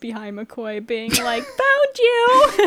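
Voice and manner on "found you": put-on very high, very loud, shrill little kid voice. Podcast host imagines a voice suddenly heard mid-episode: little kid voice. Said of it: "this like little kid voice".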